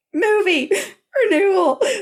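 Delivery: mock, very high sobbing, words choked, barely out. Recounting answering a partner who came running in, retelling choked-out sobbing. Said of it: "sitting up in bed sobbing".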